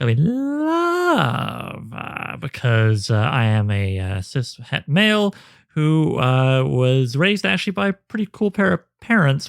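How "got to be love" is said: love said ironically, with distance, higher. Showing the right way to say the word: ironic delivery of love. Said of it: "ironic distance between myself and genuine emotion".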